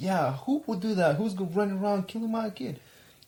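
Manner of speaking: mock high-pitched scream at the top of lungs. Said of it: "screaming her head off".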